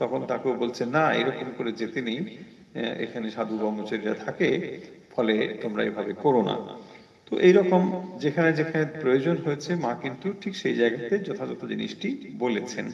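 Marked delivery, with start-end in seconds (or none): none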